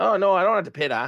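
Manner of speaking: put-on Canadian accent, put on for effect. Retelling what a driver said during the race, in a put-on Canadian accent. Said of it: "you got to say it like a Canadian".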